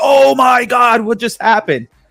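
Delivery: high, going-nuts scream. The speaker retells watching a show at home, retelling screaming at the TV. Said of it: "I start screaming at the TV like".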